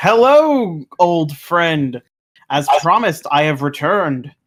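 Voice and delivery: big, loud shout in a character voice. Greeting an old friend in character on returning: yelling in character. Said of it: "I run up to him and I yell".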